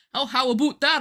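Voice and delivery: exaggerated Canadian accent, high pitch, loud. Complaining about Canadian country singers, showing how Canadians really talk, imitating Canadian everyday speech. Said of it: "I know you walk around and you go".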